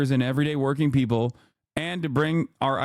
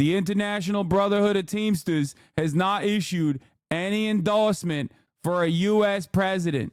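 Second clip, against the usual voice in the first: put-on Boston accent, pitched up; 5 semitones higher than usual. Reading a Teamsters statement, in a Sean O'Brien Boston accent impression. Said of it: "that's exactly how Sean O'Brien sounds".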